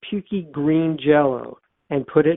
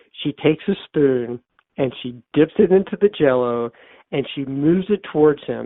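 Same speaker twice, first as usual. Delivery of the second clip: ordinary delivery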